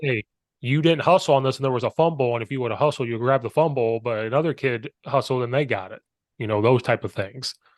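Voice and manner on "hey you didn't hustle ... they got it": plain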